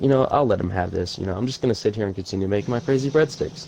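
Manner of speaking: ordinary talk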